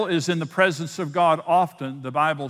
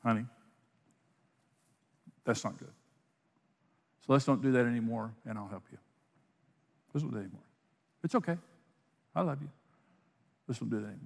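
low, hushed, gentle, tender murmur; 6 semitones lower, 11 dB quieter than usual. A speaker shows how a voice answers after you make a mistake, voice of the Holy Spirit. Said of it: "here's the voice of the Holy Spirit".

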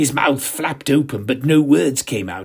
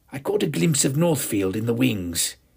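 plain

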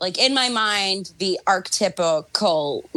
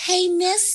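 put-on floozy voice, much higher pitch; 13 semitones higher than usual. Joking about a man's floozies and how they all talk: floozy voice. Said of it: "they all have to talk like".

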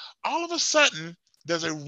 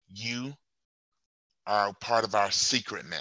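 mock very stern, deep, low and hushed; 8 semitones lower, 5 dB quieter than usual. Foxworthy turns around to Charlie, who keeps questioning: very stern voice. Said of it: "in a very stern voice goes".

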